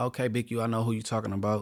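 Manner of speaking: plain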